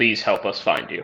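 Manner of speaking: acted muttering under breath. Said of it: "under my breath".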